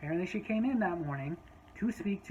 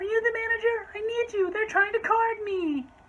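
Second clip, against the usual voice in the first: high-pitched, loud, demanding voice. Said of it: "she starts in".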